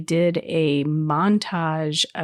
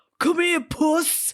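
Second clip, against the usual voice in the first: shrill, very high-pitched, loud hollering yell; 11 semitones higher than usual. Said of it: "yelling, yelling at the cat".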